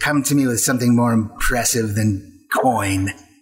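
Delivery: a little hiss running through the words. Voicing a character who turns down gold, hissing a little. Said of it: "She hisses at you a little bit".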